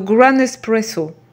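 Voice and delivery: exaggerated mock English pronunciation. Speaker names a product while explaining a step, in an exaggerated english accent. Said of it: "avec mon bel accent anglais".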